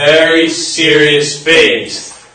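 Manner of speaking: very slow, drawn-out, mock-dramatic, grave tone.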